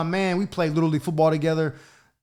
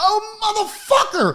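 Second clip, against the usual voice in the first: very high-pitched angry outburst, cursing. Retelling his mom opening the door on him: imitating mom's angry outburst. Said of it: "She's tight".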